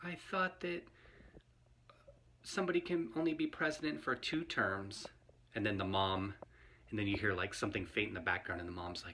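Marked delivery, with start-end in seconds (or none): 0.0-5.1 put-on high, whispered, puzzled small kid voice. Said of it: "the kid is like".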